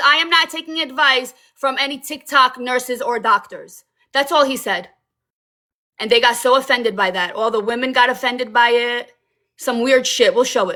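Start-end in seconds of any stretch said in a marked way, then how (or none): none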